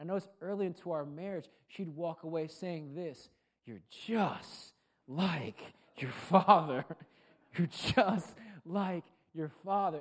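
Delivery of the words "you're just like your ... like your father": play-acted, raised, fed-up exasperated voice. Speaker quotes what his wife kept saying to him, in a retold exasperated tone. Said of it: "It was always in a very exasperated tone".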